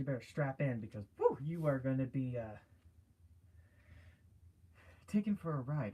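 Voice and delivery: breathless, winded voice. Speaker warning the boys and girls to strap in, out of breath. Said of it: "I'm already out of breath".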